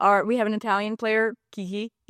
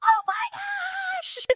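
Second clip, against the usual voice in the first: put-on very high, piercing, stretched-out shriek. Telling how a teammate reacted while the team walked to get coffee in Nashville, retelling a scream. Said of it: "Lauren Link screams".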